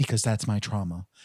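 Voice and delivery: mock-tearful imitated crying voice. Retelling a couple's fight overheard on a train, imitating a woman crying. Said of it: "she was crying".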